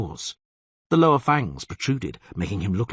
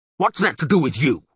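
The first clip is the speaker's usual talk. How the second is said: angry monster voice, pitched up; 5 semitones higher, 4 dB louder than usual. Narrating a story, the monster answers Geralt's question angrily. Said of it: "Said the monster angrily".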